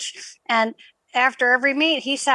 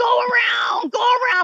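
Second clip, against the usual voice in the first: put-on very high, stretched-out, drawn-out screaming; 11 semitones higher than usual. Retelling a race as the coach urges from the side: imitating a coach screaming. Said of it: "Mister Cook is literally screaming at me".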